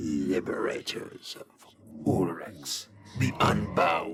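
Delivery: gleeful undead villain voice, deep, slow, drawn out. Narrating a fantasy game, the lich addresses the party: dark-delighted lich voice. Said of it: "Lich. / A skeletal visage, skin pulled tight around what muscles remain, and etched with the same runes as the amulet in rusty blood. Ears rotted and drooping from a bald skull. Robes of the finest si".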